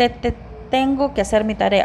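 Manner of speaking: stuttering repeat of "te" in "tengo".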